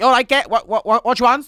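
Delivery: put-on thick, fast Liverpool accent. Retelling how a chip shop worker in Liverpool talks: thick, fast Liverpool accent. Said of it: "It's so thick and fast".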